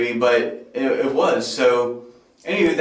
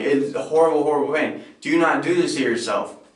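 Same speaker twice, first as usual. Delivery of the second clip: mock weeping through the words, tearful crying voice. Retelling a video made to himself about the pain: imitating own crying.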